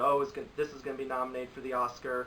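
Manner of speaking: ordinary delivery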